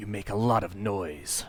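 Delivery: quiet, soft-spoken, low-key delivery. A game master voicing a man addressing the players as they leave the room, in a quiet voice. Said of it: "quiet voice".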